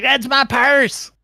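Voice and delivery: very high piping voice. Voicing a screaming woman who sounds like Bobby Hill. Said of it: "she sounds like Bobby Hill".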